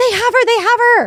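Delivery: very high-pitched, shrill, desperate yelling. Retelling what a caller said on the phone, imitating her yelling. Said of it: "listening to her, like, yelling".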